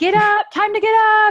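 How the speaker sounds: very high, very loud, shrill bellowing shout. A parent reenacts waking the children for school, retelling a bellowing shout. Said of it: "I was shouting out".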